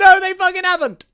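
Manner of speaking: high, loud, defiant mock shout.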